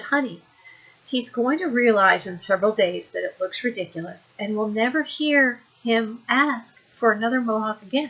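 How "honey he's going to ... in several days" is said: ordinary delivery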